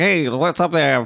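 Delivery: put-on breezy old-timey smooth talk.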